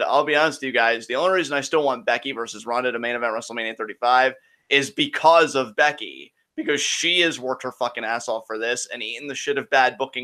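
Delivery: ordinary delivery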